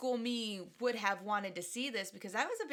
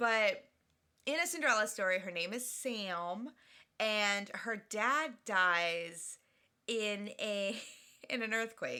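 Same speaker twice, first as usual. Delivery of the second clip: speaking through laughter, one word drawn out. Speaker describing a movie scene to another speaker, laughing while talking. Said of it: "Why are you laughing?".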